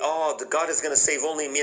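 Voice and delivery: ordinary talk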